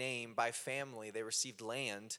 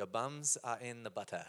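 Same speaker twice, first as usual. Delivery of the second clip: badly done, put-on South African accent. Quoting a friend from South Africa: botched South African accent. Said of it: "the biggest botch of a South African accent ever".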